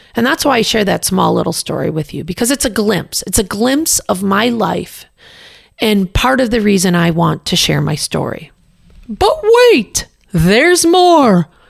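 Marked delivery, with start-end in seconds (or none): 9.1-11.5 very high, very slow, loud, drawn-out infomercial announcer. A podcast host sharing their story switches into an infomercial voice. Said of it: "That's my infomercial voice".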